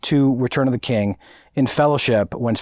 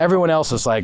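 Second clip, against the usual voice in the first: ordinary talk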